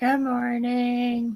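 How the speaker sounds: half-asleep, sleepy, groggy voice. Guest host answering the morning host's greeting on air, sleepy, still half in bed. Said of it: "she sounds eighty-five percent still in bed".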